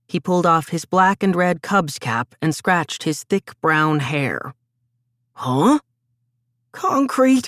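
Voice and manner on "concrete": feeble, half-voiced, weak, slightly high. Limping, the narrator repeats his answer to a puzzled questioner, weakly. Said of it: "I repeated weakly".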